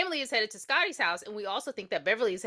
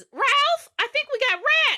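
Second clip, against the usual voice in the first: put-on yelling, higher and louder; 6 dB louder than usual. Retelling a movie scene where a wife calls to her husband: imitating someone yelling. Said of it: "so Missus Turner yells".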